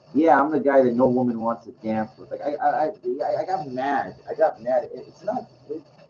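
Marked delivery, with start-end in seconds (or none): none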